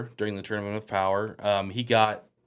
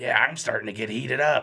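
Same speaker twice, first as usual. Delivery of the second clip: tense, strained put-on voice. Imitating Goku getting heated up: strained Tim Robinson voice. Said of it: "Just anytime he goes".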